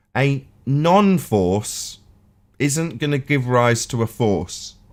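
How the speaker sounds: very slow, deliberate, each word laid out. Repeating a point to another speaker who keeps disagreeing: said slowly. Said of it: "I'll say it slower".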